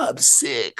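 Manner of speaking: overdone, exaggerated fake sick voice, acted out. Mocking people who overdo being ill: imitating an exaggerated sick voice. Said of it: "and they go overboard".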